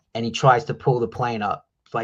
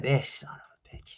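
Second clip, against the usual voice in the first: put-on stunned, fed-up, slow, exasperated disbelief; 2 semitones higher, 8 dB quieter than usual. Retelling the reveal under the mask: retelling an exasperated reaction. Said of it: "you're just like".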